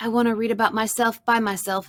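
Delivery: plain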